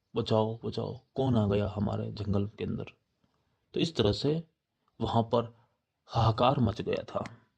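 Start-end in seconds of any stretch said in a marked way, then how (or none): none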